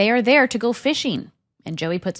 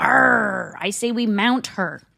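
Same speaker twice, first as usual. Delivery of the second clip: talking like a pirate. Retelling a scene where the men arrive at the boat dock, pirate voice. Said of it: "Joey says in a pirate's voice".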